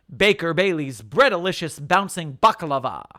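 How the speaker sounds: plain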